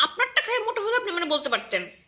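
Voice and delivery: angry voice.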